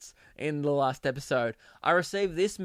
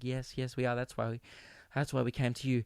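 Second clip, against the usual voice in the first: mock nervous voice, quieter; 3 semitones lower, 7 dB quieter than usual. Acting out a couple at a sexologist: imitating nervous clients. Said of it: "And they're, like, really nervous".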